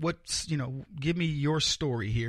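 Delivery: ordinary delivery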